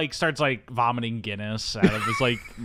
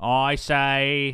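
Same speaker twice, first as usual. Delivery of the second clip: put-on old Boston accent, pitched higher; 2 semitones higher, 3 dB louder than usual. Discussing Charles's Boston accent in a movie, going into a JFK impression. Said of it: "He doesn't go full J F K like".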